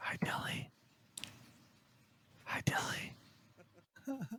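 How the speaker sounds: very slow, breathy whisper. Greeting someone named Billy during a group chat: whispering. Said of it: "you're just whispering into a recording".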